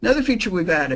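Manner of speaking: rushed, too-fast delivery. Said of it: "I am talking too fast".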